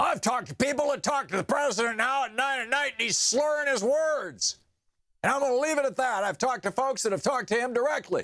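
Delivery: throat-tearing, very high-pitched rant. Quoting a show host's claim about the president: Alex Jones impression. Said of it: "when I talk like that, it just rips up my throat".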